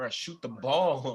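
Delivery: very loud, slow scream, "ball" drawn out. Retelling a play where Jimmy Butler screamed at a teammate: imitating Jimmy Butler screaming. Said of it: "Jimmy had to scream at him".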